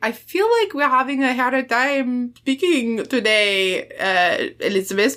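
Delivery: put-on heavily laid-on, thick French accent. Retelling a scene from a book, speaking as Jean-Claude: heavy French accent as Jean-Claude. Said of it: "I'm trying to do his accent heavier".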